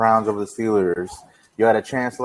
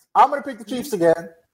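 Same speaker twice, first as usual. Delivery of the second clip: very high, squeaky put-on voice; 12 semitones higher than usual. Answering who they are picking, imitating Tyler's voice. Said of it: "Is that your Tyler voice?".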